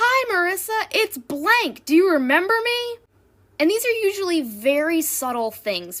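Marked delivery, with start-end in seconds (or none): 0.0-3.0 loud, high-pitched bellowing shout. Recounting how a store cashier greets her every time: retelling a cashier's shout. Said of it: "he shouts at me".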